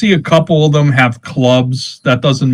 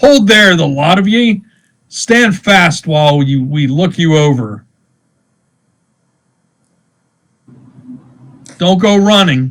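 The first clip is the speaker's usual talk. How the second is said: put-on clear, pitched-up call with faint upstate accent; 5 semitones higher than usual. Game master voices a man with a musket stepping from behind a tree, hollering in a clear voice. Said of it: "he hollers in a clear voice".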